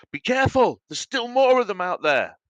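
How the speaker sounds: loud shouting, pitched very high. Voicing Krutag, who turns to the party: shouting warning. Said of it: "Krutag turns to you and shouts".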